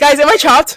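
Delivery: very loud joking shout. Retelling a joke said in a store: imitating own loud joking question. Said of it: "I say it, like, really loud".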